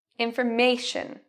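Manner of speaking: information with weight on third syllable ma. Asking listeners which part of the word is stressed: stress on ma in information. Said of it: "if you said me, correct".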